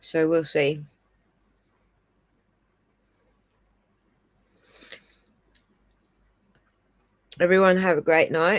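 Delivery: words spoken around a mouthful of food. Signing off to the audience while eating breakfast, talking with mouth full. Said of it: "I got my mouth full trying to eat breakfast".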